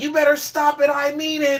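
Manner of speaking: put-on high-pitched little-boy yell. Retelling a show scene with the whale sinking: imitating Luffy's little-boy yell. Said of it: "a little boy kind of yell".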